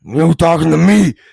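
loud, angry, gravelly, rough growl. Trying an impression after saying he can't do one: angry gravelly Al Pacino impression. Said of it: "I was in Al Pacino's like".

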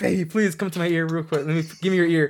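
very loud, high-pitched hollering yell. Acting out a wife giving birth calling to her husband: imitating someone yelling. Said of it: "she just yells".

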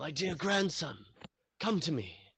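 put-on very high-pitched elderly grandfather voice calling out. Telling the listener's story, the grandfather calls out to his grandson: grandfather calling out. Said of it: "you hear your grandfather call out to you".

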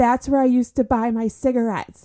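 high, called-out shouted yell. Speaker retells a marathon runner running past the express station, retelling a yell. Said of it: "he yelled out".

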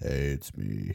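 imitated deep voice. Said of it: "I'm like [name]".

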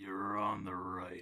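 warped, distorted, sinister, otherworldly evil voice, dropped low. Narrating a scene, voicing something speaking from a woman's mouth: distorted evil voice. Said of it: "You hear a very distorted, evil voice".

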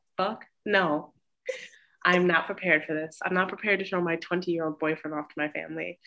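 ordinary delivery

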